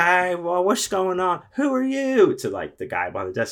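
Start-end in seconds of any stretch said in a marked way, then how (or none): 0.0-2.4 put-on sloppy drunken slur, very high and loud. Retelling what a drunk woman said at the desk, imitating drunk slurring.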